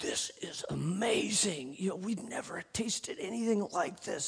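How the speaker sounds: quiet, amazed whisper.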